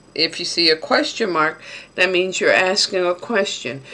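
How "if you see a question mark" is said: usual speaking voice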